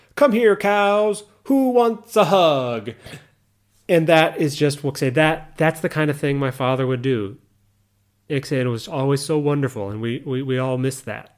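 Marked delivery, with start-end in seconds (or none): 0.2-2.9 mock booming, very loud, high, unhurried drawn-out call. Retelling how their father called out to cows by a gate, very loud call. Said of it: "saying in a very loud voice".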